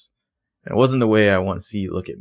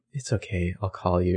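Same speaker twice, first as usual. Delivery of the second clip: gentle, soft, soothing, comforting tone; 3 semitones lower, 6 dB quieter than usual. Retelling how Aria answers Andrew after his kiss: Aria's soft comforting voice. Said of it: "she says it in such a soft, comforting voice".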